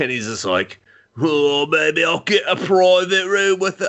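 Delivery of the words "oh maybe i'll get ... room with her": bad, put-on Australian accent, pitched up, drifting British. Retelling a movie scene as Kano: Kano voice, more British than Australian. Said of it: "I went more British than Australian".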